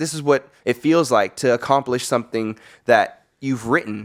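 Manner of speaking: ordinary talk, nothing marked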